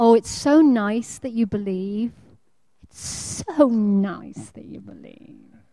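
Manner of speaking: soft, condescending, patronizing talking-down voice. Speaker imitates what someone tells a believer, in a mock-patronizing tone. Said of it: "in that very patronizing tone".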